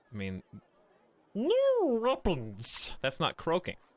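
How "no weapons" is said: very high, squeaky, swooping creature voice. The narrator voices a character in the scene, in a super high-pitched Gollum voice. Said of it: "That's just like super high-pitched Gollum voice".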